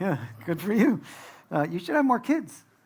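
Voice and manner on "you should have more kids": put-on Indian-accented voice, higher. Speaker congratulating a couple on their child, slipping into an indian mom voice. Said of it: "I sound like an Indian mom".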